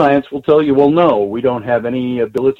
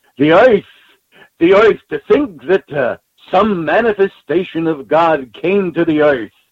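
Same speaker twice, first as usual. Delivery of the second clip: put-on New York accent, higher pitch; 4 semitones higher than usual. Recounting a physicist's lectures, the speaker quotes him in Richard Feynman's accent. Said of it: "in his accent, he goes".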